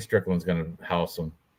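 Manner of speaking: usual speaking voice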